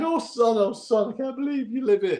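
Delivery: high, tearful voice, weeping through the words. Retelling an old neighbour's reaction, imitating someone crying. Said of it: "He started crying".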